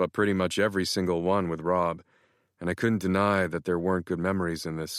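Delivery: plain reading voice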